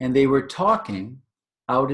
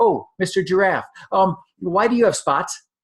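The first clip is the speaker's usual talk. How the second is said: eager, excited little elephant voice, higher; 5 semitones higher than usual. Telling a story to children, voicing the baby elephant: excited baby elephant voice. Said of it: "the baby elephant is so excited".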